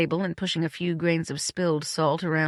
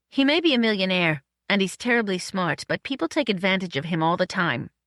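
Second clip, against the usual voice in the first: plain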